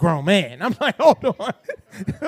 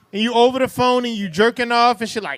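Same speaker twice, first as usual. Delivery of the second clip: normal talking voice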